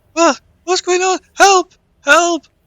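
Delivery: put-on shrill, loud, muffled young woman's voice. The narrator voices someone calling from inside a body bag: muffled young female voice. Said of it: "you hear a young female voice, muffled".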